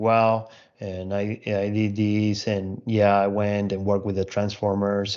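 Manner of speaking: flat, unvarying monotone, even volume. Demonstrating a monotone way of describing your own work: flat monotone, even volume. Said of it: "your tone starts to be like very like monotone".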